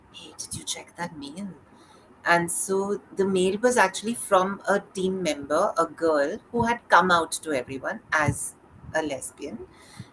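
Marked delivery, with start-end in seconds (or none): 0.1-1.4 very quiet, quick, hushed conspiratorial murmur. Retelling what a friend's team lead asked him one morning, mock-conspiratorial. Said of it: "in a very conspiratorial tone".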